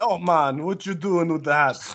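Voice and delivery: bad, terrible put-on Jamaican accent. Joking with the others about a Jamaican hat, in a bad Jamaican accent. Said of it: "we're not doing the Jamaican people justice".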